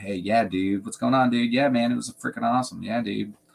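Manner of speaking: full-on beach surfer dude voice. Describing a man's personality, imitating how he talks: surfer dude voice. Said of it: "totally has kind of like a surfer".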